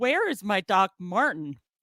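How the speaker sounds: put-on weepy, tearful voice, crying through sobs. Speaker retells asking mom about a missing shoe, imitating own past crying. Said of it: "I started crying".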